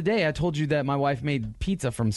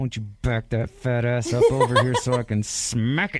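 spoken through gritted teeth, jaw clenched; 3 semitones lower than usual. Showing how guys talk when mad or talking sexy, through gritted teeth. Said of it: "I'll do it with my teeth girded".

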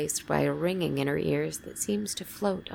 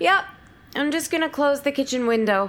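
very high, loud shouted delivery; 10 semitones higher, 6 dB louder than usual. Narrator reading a character answering a call from upstairs: shouted reply. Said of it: "[name]'s lying in a fetal position on her side of the bed, / [name]'s lying in a fetal position on her side of the bed, / but her voice is hoarse".

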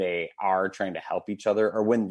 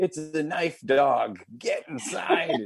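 very slow, drawn-out, swooping high rising yell; 9 semitones higher than usual. Retelling yelling at them to get inside, away from a porcupine; retelling a yell. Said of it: "yelling other things".

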